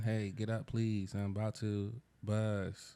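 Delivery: put-on flat, unenthusiastic voice. Retelling what they say to a partner: retelling own slow unenthusiastic plea. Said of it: "I say just like that, too".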